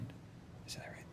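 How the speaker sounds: unvoiced, secretive whisper under the breath.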